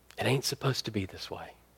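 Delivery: very quiet, hushed whisper. Retelling what a woman whispered into a weeping man's ear: retelling a whisper. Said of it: "she just whispered into his ear".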